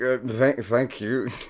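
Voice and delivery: put-on slurred drunk voice. Voicing a sobering but still drunk character thanking a lady: acting drunk. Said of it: "drunk, but you're like".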